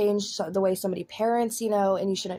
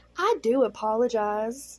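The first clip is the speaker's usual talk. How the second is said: put-on Southern belle accent; 2 semitones higher than usual. Apologizing to first-time viewers of the channel: Southern Belle accent. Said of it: "in the most Southern Belle accent that I can".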